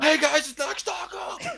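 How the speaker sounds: weird whispered scream, very high-pitched. Mimicking another podcast speaker's greeting without hurting listeners' ears, in a weird whisper scream. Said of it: "a weird whisper scream you got".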